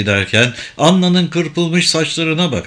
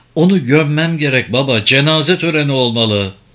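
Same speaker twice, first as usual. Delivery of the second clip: ordinary delivery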